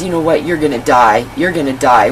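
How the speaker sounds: ordinary delivery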